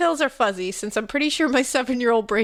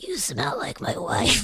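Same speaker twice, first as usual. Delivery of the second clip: low, deep, rumbling growling voice; 2 semitones lower, 4 dB quieter than usual. Retelling what a man said to the speaker as a child, in a deep growling voice. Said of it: "all in a deep growling voice".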